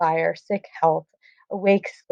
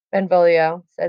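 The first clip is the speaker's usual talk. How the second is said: ordinary talk, nothing marked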